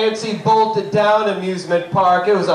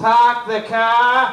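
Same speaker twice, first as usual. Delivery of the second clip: Boston accent, "car" drawn out with no r. Showing a favorite feature of the Boston accent, Boston accent, dropped R's. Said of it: "the dropping of the R's when you need an R".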